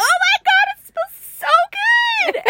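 acted-out, very high, loud, excited squealing gush. Retelling cheering a child on about his hair: imitating own excited squealing. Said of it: "I start jumping and squealing".

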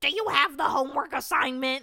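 put-on loud, high-pitched nerdy kid voice.

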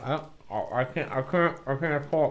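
soft, halting speech with stumbling words. On the Piff Company podcast, trying to smoke mid-conversation, talking with a joint in mouth. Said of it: "I got a joint in my mouth".

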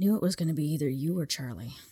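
mock mumble, muttered under the breath. Retelling what she said randomly, out of nowhere: imitating someone mumbling to herself. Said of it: "Mumbles it to herself".

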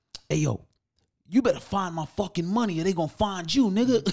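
put-on high, loud screaming. Retelling a man screaming across the store, imitating someone screaming. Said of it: "he's screaming across the store".

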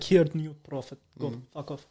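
put-on Russian accent. Imagining God sending a new prophet to Donald Trump, God with a Russian accent. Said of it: "I don't know why he's got a Russian accent".

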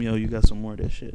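whispering. Speaker retelling what they whispered to a man in Florida, whispering. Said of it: "I'm whispering to him".

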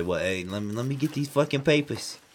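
put-on New Jersey accent. Doing voices, playing a guy at a car impound lot: New Jersey dude accent. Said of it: "So a New Jersey dude".

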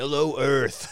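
on-air radio announcer voice. Joking that the radio signal sounds like a morning show, in a radio guy voice. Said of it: "radio guy voice?".

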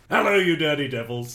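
loud, guttural put-on Scottish accent. Reading a listener's message to the podcast as a character, Talmadge voice. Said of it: "is he Scottish?".

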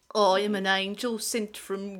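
attempted put-on Brummie accent. Several speakers quoting Peaky Blinders lines; one gives an attempted Brummie accent. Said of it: "just work on your Brummie accent?".

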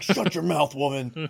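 mock threatening voice. Imagining a friend being really dark behind closed doors: imitating Lance being dark. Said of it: "what if Lance is really dark behind closed doors?".

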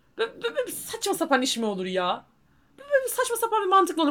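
high, angry stutter, tripping over words. Ranting about someone who cannot grasp a mother's worry over grades, stammering from anger. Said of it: "Bak kekeledim gerçekten sinirden".

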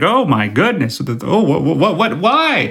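put-on frantic, rising panicked babble, words tumbling out. Retelling a Friends scene where Ross is stuck in tight pants: imitating Ross panicking. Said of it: "he's panicking".

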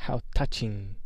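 words hissed out. Reading the reply to Harry's shout, hissing. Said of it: "he hissed".

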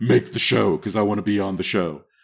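low, deep delivery. Retelling what Allie said about the show: imitating Allie's deep voice. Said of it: "Real deep voice".

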